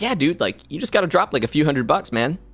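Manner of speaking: fake casual, unbothered voice. Retelling a friend urging spending money on the game: imitating Chris, nonchalant. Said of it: "how he just nonchalantly".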